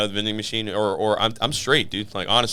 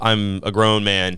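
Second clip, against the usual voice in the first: plain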